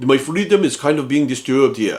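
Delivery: put-on mocking voice. Retelling a speech in which Arnold mocks people: imitating Arnold mocking people. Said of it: "That's how he says it".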